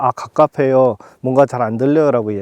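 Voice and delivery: ordinary talk, nothing marked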